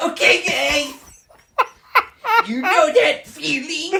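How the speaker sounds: very loud, very high, maximum-energy pitchman hype. Told to say the line again with more energy, do a high-energy Guy Fieri impression. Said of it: "More energy".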